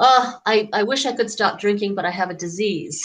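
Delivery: ordinary delivery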